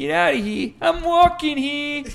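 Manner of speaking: loud Boston accent. Asked what a boston accent sounds like, the speaker demonstrates: boston accent impression. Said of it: "What's a Boston accent sound like?".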